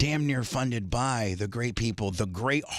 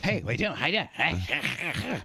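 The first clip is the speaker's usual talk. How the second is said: put-on nagging cartoon voice, higher pitch; 4 semitones higher than usual. Imitating a cartoon character who always asks questions: nagging cartoon voice. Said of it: "Yeah, that's her".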